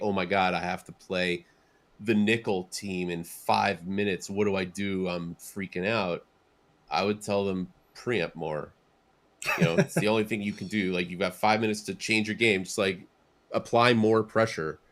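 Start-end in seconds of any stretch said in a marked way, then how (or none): none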